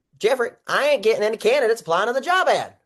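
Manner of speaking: put-on loud, high, butchered Southern accent. Retelling a friend's phone call from Alabama: bad Southern accent. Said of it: "awesome Southern accent. I just butchered that".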